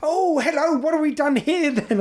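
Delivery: high, lively, bubbly camp nurse voice. Retelling what a nurse said at the hospital: imitating a camp, lively nurse. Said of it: "He's quite a camp guy, quite very lively".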